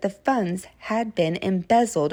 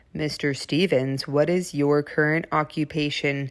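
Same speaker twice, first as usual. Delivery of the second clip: low, lawyerly courtroom voice; 5 semitones lower than usual. Reading one part of a practice transcript, in a low voice. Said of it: "I'll be speaking in a low voice".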